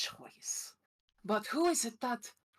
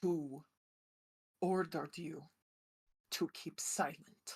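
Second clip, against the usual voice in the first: very angry, furious, dark low tone; 4 semitones lower, 3 dB quieter than usual. In a roleplay, losing her temper, she demands an answer in a very angry, dark tone. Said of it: "say in a very angry, dark tone".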